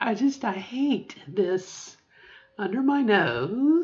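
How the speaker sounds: voice cracking on "nose", word drawn out. Looking in the mirror after laser treatment, talking about the skin: voice cracking. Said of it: "my voice cracked".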